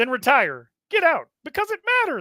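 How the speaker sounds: high-pitched, loud, sing-song delivery. Reading a Herm Edwards quote aloud in a Kermit the Frog voice. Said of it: "read this Herm Edwards quote as if you were Kermit the Frog".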